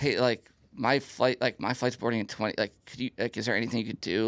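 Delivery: acted, helpless pleading tone, full of hesitations. Retelling asking an airport agent for help, imitating his own pleading ask. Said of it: "say it to me as if I'm her and how exactly you asked".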